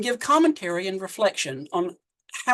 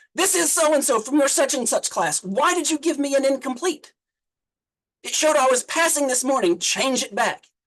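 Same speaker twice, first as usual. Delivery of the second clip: panicked, angry, high, rushed rant; 5 semitones higher than usual. Retelling a student's phone call about an incomplete grade: imitating an angry panicked student. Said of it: "angrily yelling".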